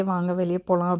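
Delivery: ordinary delivery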